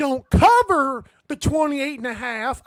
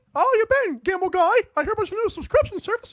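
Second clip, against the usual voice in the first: silly, high-pitched cartoon voice, rattled off fast; 8 semitones higher than usual. Asked about a cartoon voice, answering in a Goofy voice. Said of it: "of course, Goofy".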